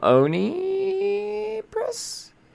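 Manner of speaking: Oni Press pulled up in a big rise. Retelling what someone asked about a publisher: strongly rising question on Oni Press. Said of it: "He said with the giant question mark on his breath".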